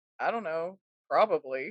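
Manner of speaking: put-on flat monotone delivery. Retelling own flat answer to a customer's question: imitating own monotone reply. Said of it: "so, like, monotone about it".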